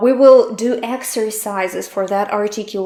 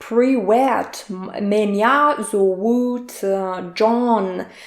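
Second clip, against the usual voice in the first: very slow, typical American accent in Russian. Imitating a typical American from Russian movies speaking Russian: typical American accent in Russian. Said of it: "a typical American in Russian movies, um, sounds like".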